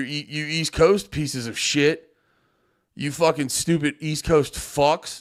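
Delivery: joking, fake aggressive, hostile tirade. Joking about the morning start for viewers elsewhere, mock aggressive. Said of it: "I don't know why I'm getting so aggressive".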